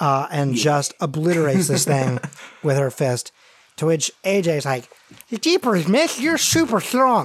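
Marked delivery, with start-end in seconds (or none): 5.4-7.3 put-on lisping child voice, pitched much higher. Narrator voicing AJ after Lucy smashes something with her fist; AJ's lisping kid voice. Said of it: "So is your lisp, kid".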